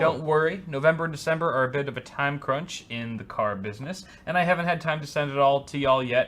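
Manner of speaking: normal talking voice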